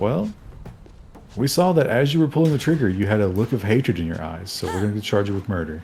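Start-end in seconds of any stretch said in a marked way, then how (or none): none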